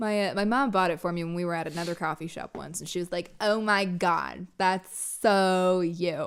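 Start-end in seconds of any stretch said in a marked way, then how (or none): 3.4-6.3 aggressive, pushy voice, dragged out very slow. Retelling what a parent said when buying a cup: aggressive imitation of mom. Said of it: "That was a very aggressive portrayal of your mom".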